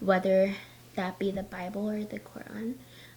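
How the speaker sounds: hushed, quiet half-whispered aside. Admitting a plan they fear people will judge, half-whispering. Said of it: "I'm whispering it".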